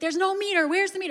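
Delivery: put-on high, rapid, rattled-off yelling. Retelling a man yelling at the guy who ticketed him, retelling a yell. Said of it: "he's just yelling at this guy".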